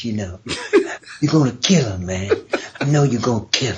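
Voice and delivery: silky, smooth, low smooth-talking voice. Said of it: "he had that voice kind of like this".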